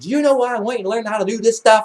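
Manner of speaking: put-on very high-pitched, loud scolding yell. Retelling an argument at fifteen, imitating mom yelling. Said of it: "she's yelling this at me".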